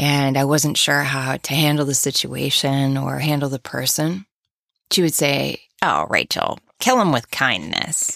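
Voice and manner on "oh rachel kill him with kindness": bad put-on grandma voice, swooping pitch. Retelling advice a relative gave growing up: bad impression of Bubby. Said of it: "I'm doing a terrible job mocking Bubby".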